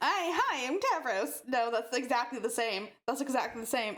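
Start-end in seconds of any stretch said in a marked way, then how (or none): 0.0-1.4 slightly nasal character voice, high and unhurried. Trying out voices for different characters, a high nasal Tavros voice. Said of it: "high nasally voice a bit".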